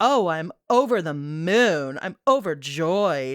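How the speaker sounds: put-on sarcastic tone, slow, moon drawn out. Retelling Molly's answer to "are you happy for us": imitating Molly, sarcastic. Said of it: "So sarcastically".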